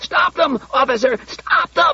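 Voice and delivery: very high, piercing, rising shriek. Narrator voicing the manager calling to an officer, shrieking. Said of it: "The manager was shrieking".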